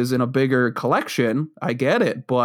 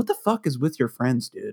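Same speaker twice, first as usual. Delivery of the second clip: mock snide, sarcastic, cutting tone; 3 dB quieter than usual. Retelling what someone said about friends: imitating someone snarky. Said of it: "imagine it in the most snarky way possible".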